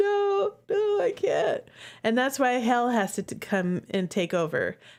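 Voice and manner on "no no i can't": acted weepy wail, very high and very slow. Retelling how a cowardly character answers a plea to fix things: imitating someone crying.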